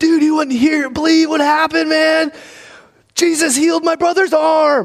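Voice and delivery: put-on very high, excited shout. Retelling a brother calling a buddy after a healing: imitating brother yelling on phone. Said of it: "he's yelling at him on the phone".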